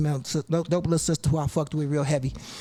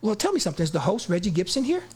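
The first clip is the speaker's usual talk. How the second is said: fake polite, put-on nice-guy voice; 3 semitones higher than usual. Retelling asking to get in and whether the host is there, put-on nice guy voice. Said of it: "I'm trying to put my best nice guy voice on".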